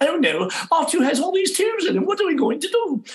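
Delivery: very high, playful, swooping silly cartoon voice. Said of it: "voices and sounds to entertain him".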